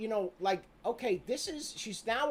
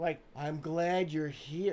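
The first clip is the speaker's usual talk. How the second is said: put-on creepy voice, slow drawl; 5 semitones lower than usual. Speaker mimics how a guy sounds to him, imitating a creepy slow voice. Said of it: "like that slow, like that".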